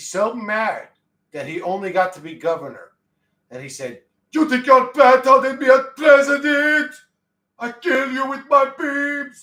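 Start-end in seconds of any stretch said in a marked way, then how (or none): 4.3-9.4 bad put-on Austrian accent, very high, shrill and loud. Voicing a figure who turned into the former governor: bad Arnold Schwarzenegger impression. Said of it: "My Austrian is not good".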